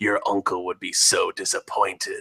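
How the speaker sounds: soft, contemptuous, sneering tone. An opponent looks up at the hero who was just hit and taunts them, sneering. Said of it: "they sneer and say".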